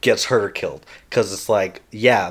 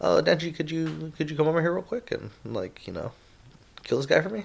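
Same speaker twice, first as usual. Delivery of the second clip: gentle, soft-spoken voice, light and hushed; 6 semitones higher, 8 dB quieter than usual. Imitating a female character while discussing a show, soft-spoken. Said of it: "she's very just like soft spoken".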